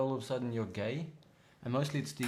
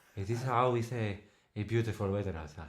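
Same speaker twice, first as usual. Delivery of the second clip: put-on Spanish accent; 3 semitones lower, 3 dB louder than usual. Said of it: "Spanish is more".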